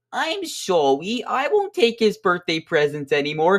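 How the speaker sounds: put-on apologetic child voice.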